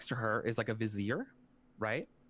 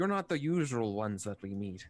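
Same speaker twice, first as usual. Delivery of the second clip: put-on heavy, laid-on mouse accent. Voicing a mouse who looks at the arriving visitors: thick mouse accent. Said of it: "a thick mouse accent".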